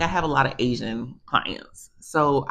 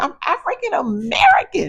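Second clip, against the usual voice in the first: full-on high, swooping yell, words hammered; 6 dB louder than usual. Retelling repeating yourself to Miss Nancy, reenacting your own yell. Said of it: "So I'm literally yelling".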